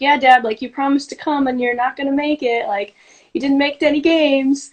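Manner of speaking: playful, joking, teasing tone. Retelling what she said to her dad, retelling a joking jab. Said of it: "But jokingly".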